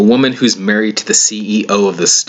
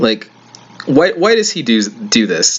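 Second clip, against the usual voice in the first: usual speaking voice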